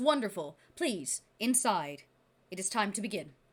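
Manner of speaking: voicing a feathered creature, bird voice. Voicing the feathered creature who greets the players: voicing the feathered creature. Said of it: "he says".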